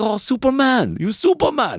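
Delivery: very high, swooping, terrible put-on Puerto Rican accent. Retelling what a local gang shouted after he threw a man out, in a terrible Puerto Rican accent. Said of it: "that was a terrible accent".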